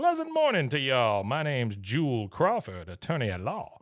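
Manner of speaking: animated, sing-song, wide pitch swings, big lawyer voice. Retelling a cartoon lawyer's lines: Foghorn Leghorn type voice. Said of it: "foghorn leghorn type".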